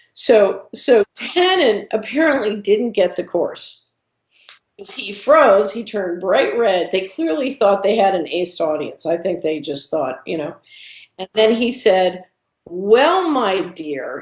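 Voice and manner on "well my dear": mock, very sarcastic, syrupy dripping delivery with swooping tone. Retelling what he said after freezing up: retelling a sarcastic, dripping tone. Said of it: "in a very sarcastic, dripping tone".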